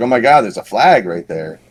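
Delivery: ordinary delivery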